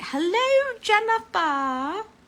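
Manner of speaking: high, loud, mock Scottish accent. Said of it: "wanted to start talking in a Scottish accent".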